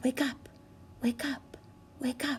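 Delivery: tender, gentle, hushed, very soft whisper. Leading a class to wake a ladybug nicely: gentle whisper. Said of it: "Whisper it with me so we can wake up this ladybug so nicely".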